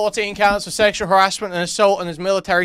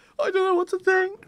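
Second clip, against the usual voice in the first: high, mock whimpering.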